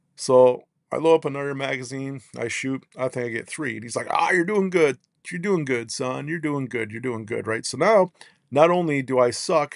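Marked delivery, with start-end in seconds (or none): 4.1-7.5 put-on mocking old man instructor voice. Retelling how an old firearms instructor made fun of the speaker's shooting, imitating a mocking old man. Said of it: "this old guy making fun of me".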